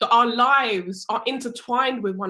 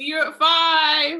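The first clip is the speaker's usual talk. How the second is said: high shouting, "five" drawn out; 6 semitones higher, 4 dB louder than usual. Leaving a call early, saying bye to everyone, shouting goodbye. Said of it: "I don't know why I'm shouting".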